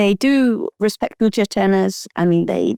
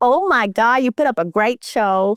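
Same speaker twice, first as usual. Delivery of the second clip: put-on Southern American accent; 4 semitones higher than usual. Retelling a woman who approached her after winning a singles title; put-on Southern American accent. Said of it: "Not the American accent".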